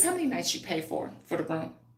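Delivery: mock stern, talking-down scolding parent voice. Retelling calling a grown man over, imitating scolding own kids. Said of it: "I did him like this".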